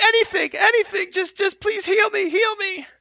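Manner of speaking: very high, very loud, shrill, agonized, pained screaming. Voicing a wounded character writhing around the ground: screaming in pain. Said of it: "screaming in pain".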